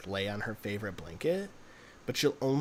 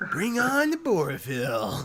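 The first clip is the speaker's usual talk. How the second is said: high, loud, very slow, stretched-out drawl; 7 semitones higher, 8 dB louder than usual. Imitating Adam Sandler introducing himself to a science class: Adam Sandler impression. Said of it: "I can't do his voice at all".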